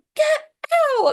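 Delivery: shrill, very high, loud shrieking scream. Recounting a story, the speaker repeats what a woman told a man: retelling a scream. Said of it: "She's like".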